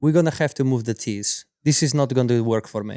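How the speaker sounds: angry, put-out, irritated tone. Retelling a golf opponent's complaint about moving the tees: imitating Natalia, mad. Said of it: "She was mad".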